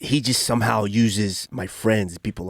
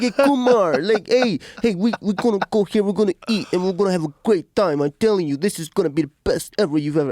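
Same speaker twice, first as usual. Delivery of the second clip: put-on Italian-style accent, very high pitch; 11 semitones higher, 4 dB louder than usual. Retelling how an Italian guy pitched restaurants: imitating an Italian guy's way of talking. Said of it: "and the way he talks, you know, is Italian guy".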